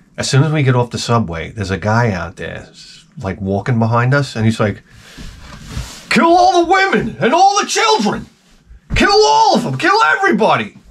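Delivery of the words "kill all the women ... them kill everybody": crazed, ranting, very high, swooping loud yell. Retelling a stranger on the street shouting behind them: imitating a man yelling louder. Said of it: "his voice is getting louder and louder".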